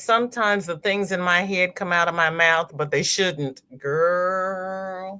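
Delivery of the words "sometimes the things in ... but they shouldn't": ordinary delivery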